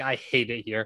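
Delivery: mock, super depressed, gloomy, deflated, defeated tone. Retelling what a traded player said in an interview: imitating someone sounding super depressed. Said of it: "he just sounded super depressed".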